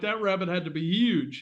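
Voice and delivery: ordinary talk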